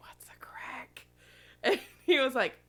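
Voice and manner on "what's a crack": very quiet, hushed whisper. Retelling a question they whispered to him, whispering. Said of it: "I just like whispered to him".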